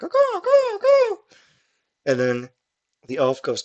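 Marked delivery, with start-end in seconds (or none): 0.0-1.2 drawn-out, very high crow caw. Shapash covers his mouth and throws his voice, in a crow-like cawing voice. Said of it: "do ventriloquism to make it sound like a crow".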